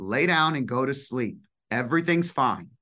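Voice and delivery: put-on, firm, strong, parental voice. Retelling telling a child to lie down and sleep: firm strong voice. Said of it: "a very firm, strong voice".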